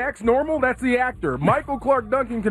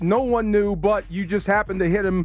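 ordinary talk, nothing marked

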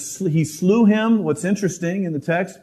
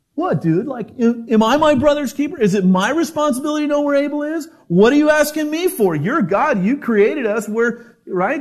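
defiant, full of attitude, pitched up; 7 semitones higher than usual. Acting out how a brother answers God's question, with put-on attitude. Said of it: "sense of attitude in his voice".

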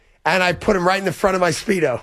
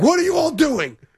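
put-on angry voice, higher; 9 semitones higher than usual. Retelling how a colleague reacted to everyone watching the video: imitating Mike being mad. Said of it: "And he was so mad".

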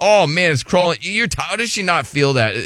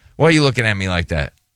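ordinary talk, nothing marked

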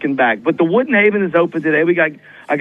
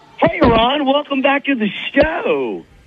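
exaggerated, very high, swooping, sing-song delivery; 10 semitones higher than usual. A guest joining a live show greets the host, in an over-the-top voice. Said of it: "Did you need to go with the over-the-top voice guy?".

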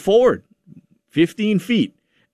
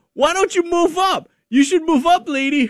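put-on very high, shrill little-girl yell. Retelling a daughter yelling at a driver at the gas station: imitating a child yelling. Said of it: "starts yelling".

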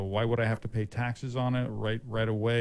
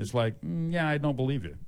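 usual speaking voice

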